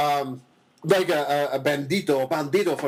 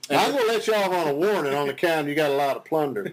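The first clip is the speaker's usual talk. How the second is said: fake Southern drawl, put-on accent. Playing a boat cop pulling over a pirate: put-on southern accent. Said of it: "he's always got this southern accent".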